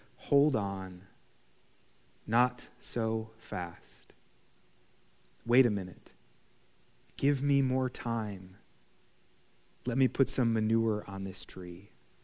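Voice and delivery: hushed, quiet, soft-spoken, low-pitched voice. A speaker voices the parable answering our noisy, aggressive mission, in a quiet voice. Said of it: "in a quiet voice".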